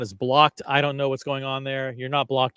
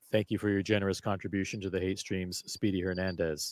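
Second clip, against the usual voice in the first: artificial, machine-like computer voice, read flatly; 6 semitones lower, 9 dB quieter than usual. Reading a donation thank-you aloud in a put-on AI-style voice. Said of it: "I'll now read it in A I O C voice".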